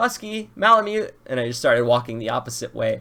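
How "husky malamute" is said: very high-pitched, shrill yell. Retelling walking away from a cop at the dog park, imitating own past yelling. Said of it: "I'm, like, yelling".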